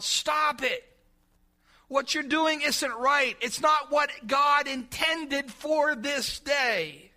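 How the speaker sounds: booming, deliberate, slow, loud acted prophet-like shout. Acting out a prophet stopping the crowd: loud yell. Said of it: "with a loud voice, he yelled".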